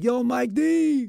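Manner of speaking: high, slow, yelled call, projected far.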